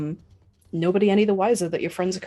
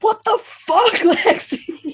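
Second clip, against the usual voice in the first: very high, shrill, loud yelling voice; 7 dB louder than usual. Game narrator voices a character shouting at lexi as gunfire starts, shouting. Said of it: "Flatwound shouting".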